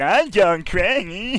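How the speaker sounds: goofy put-on voice, very high and loud. Suggesting a joke they should have done on the shoot, really silly voice. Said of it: "Do a really silly voice".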